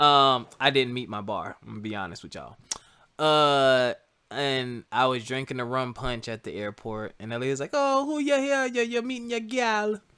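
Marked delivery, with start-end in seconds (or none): 7.7-10.0 very high, terrible put-on Jamaican accent. Retelling what Ellie asked at the airport, in Ellie's voice with a bad Jamaican accent. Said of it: "that was a terrible Jamaican accent".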